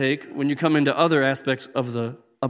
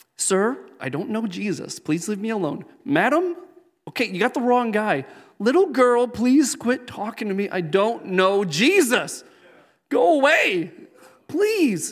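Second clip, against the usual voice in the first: put-on fumbling, socially awkward nerd voice; 7 semitones higher than usual. Retelling Peter denying he knows Jesus, in a put-on awkward Peter voice. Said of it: "I give him the awkward voice".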